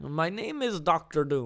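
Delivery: slow, laid-on put-on Austrian accent. Imagining an actor playing Doctor Doom: put-on Austrian European accent. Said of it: "Austrian, European accent".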